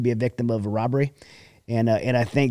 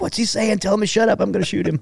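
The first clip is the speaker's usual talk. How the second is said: put-on frantic, panicked outburst at very high pitch; 9 semitones higher than usual. Retelling a car ride, the speaker reenacts a companion panicking in the back seat. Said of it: "He's like panicking".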